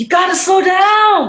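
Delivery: high, loud, urgent shout.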